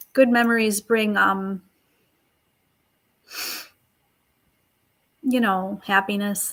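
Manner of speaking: voice catching, choked up, on the verge of crying. Quoting what someone said about good memories, choking up. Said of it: "oh, I'm going to cry".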